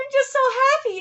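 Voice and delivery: happy-sounding words through tears, high, tearful crying voice. Answering someone who says to stop the waterworks: crying while talking. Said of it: "stop with the waterworks".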